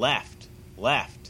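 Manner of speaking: ordinary talk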